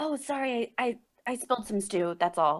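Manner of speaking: whispered character line. Speaking in character to a waking sleeper, whispering in character. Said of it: "I just kind of, like, whisper".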